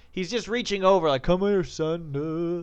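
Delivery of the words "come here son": put-on French accent, drawn-out "son". Retelling a dad reaching over a balcony partition, with a French accent. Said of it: "with a French accent".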